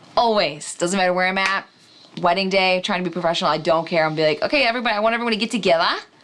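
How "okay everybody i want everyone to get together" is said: put-on Australian accent, put on for fun. Speaker acting out calling wedding guests together, in an australian accent. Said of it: "I can do a really good Australian accent".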